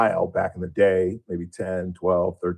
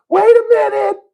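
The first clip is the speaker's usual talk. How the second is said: put-on very high, loud tiny child's voice. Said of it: "this little tiny voice go".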